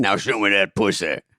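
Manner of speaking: fake deep demon voice. Playing a waitress with a catchphrase, the speaker suddenly shifts: Exorcist demon voice. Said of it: "Turns into the Exorcist".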